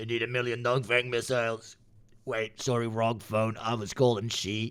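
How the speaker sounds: deliberately bad, put-on Ukrainian accent. Acting out a phone call asking for missiles: Zelensky accent. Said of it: "I cannot do a Zelensky accent".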